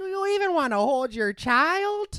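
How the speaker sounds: put-on Midwestern accent. In a sketch, one new parent asks the other about holding their child, midwest accent. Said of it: "Kind of forgot how to do a Midwest accent".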